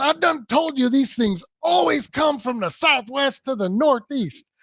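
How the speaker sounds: acted-out, worked-up, heated yelling. Retelling how a man started yelling at his wife: retelling a man yelling. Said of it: "he starts yelling at his wife".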